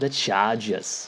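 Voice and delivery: terrible fake Boston accent. Going through the 4 o'clock games, naming a team in a terrible Boston accent. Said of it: "I don't know why I even said it like with a terrible Boston accent".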